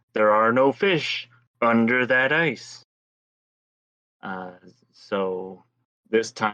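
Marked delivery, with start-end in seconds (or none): 0.2-2.9 put-on huge booming voice. Telling a joke, voicing the voice an ice fisherman hears, big booming voice. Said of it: "the voice booming saying".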